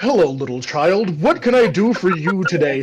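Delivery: genial, very amicable, eager, welcoming tone. Voicing a big Minotaur leaning down to a small child: very amicable. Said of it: "in a very amicable pose".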